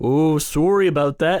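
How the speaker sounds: put-on, fake Canadian accent. Saying sorry in a put-on Canadian voice. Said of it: "you actually messed that up. It's sorry about that".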